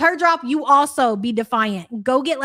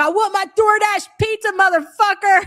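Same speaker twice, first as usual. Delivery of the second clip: put-on loud screaming in a Canadian accent; 8 semitones higher, 4 dB louder than usual. Imitating someone screaming a demand for pizza: imitating a screaming canadian accent. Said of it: "She would scream".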